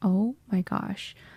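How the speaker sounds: mock terrified voice. Retelling seeing a giant needle before stitches: retelling own terror. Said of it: "I am just terrified".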